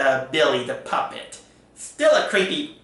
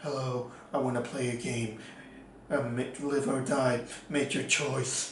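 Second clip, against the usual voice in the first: bland, ordinary, generic, plain, very hushed voice; 2 semitones lower, 11 dB quieter than usual. Comparing two horror villains' voices, mocking one as a generic Spiral Killer voice. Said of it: "he sounds so generic".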